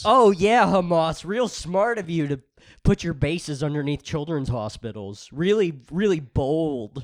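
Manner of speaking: heavily ironic, fake, sarcastic delivery. Imitating a guy in the Israel-Palestine debate fluent in sarcasm: acting out sarcasm. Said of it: "a guy in the Israel-Palestine debate if he's fluent in sarcasm".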